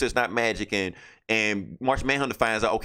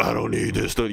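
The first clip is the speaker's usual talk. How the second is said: rough, gravelly put-on character voice. Retelling a comic scene where Flash talks like Batman: imitating Flash doing a rough Batman voice. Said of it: "doing his gr-, rough voice".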